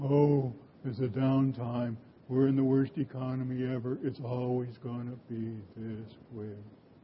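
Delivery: low, soft, gloomy drone, sagging. Speaker mimicking how we all talk during a downtime, gloomy Eeyore voice. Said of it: "we all ought to do an imitation of Eeyore".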